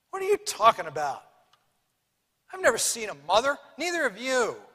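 furious, swooping, enraged shout. Narrator reads a brother answering his sister: furious. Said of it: "Her brother becomes furious".

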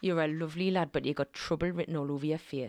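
put-on Newcastle Geordie accent. Asked by the other host to give a geordie, putting on a geordie accent. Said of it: "So give us a Geordie".

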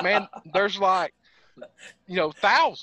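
normal talking voice

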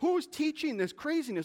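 worked-up outburst. Addressing viewers while reading something, getting all worked up. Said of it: "I'm getting all worked up here".

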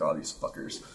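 breathy, hushed, resentful, bitter near-whisper. Retelling feelings toward street performers: mock resentful muttering. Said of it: "still a little resentment towards them".

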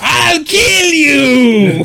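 very high, cartoonish yell, "you" stretched out. Explaining the voice actor just uses his Fred voice for this character: Fred voice. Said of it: "so he's just Fred going like".

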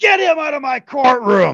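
very loud, high-pitched shout. Speaker retells what the judge yelled at him in court, retelling a yell. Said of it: "And he just yells".

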